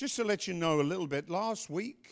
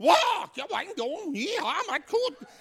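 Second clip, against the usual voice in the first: high, loud panicked yelp. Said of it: "And they all panic".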